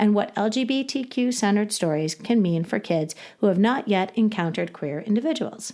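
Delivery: ordinary talk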